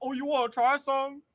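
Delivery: very loud, high-pitched shout, as if across distance. Retelling how people call out from fifty feet away: imitating someone shouting. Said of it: "'Cause they shouting".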